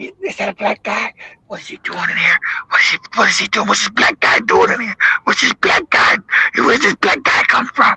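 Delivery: low, barely voiced, hushed whisper under the breath. Retelling shoppers who followed through a grocery store: imitating someone whispering. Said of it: "You hear him whispering".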